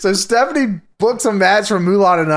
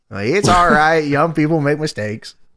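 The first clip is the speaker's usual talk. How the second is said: normal talking voice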